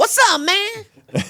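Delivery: very high, pushed-up comic voice. Urging others to try voices: Chris Tucker impression. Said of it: "Chris Tucker".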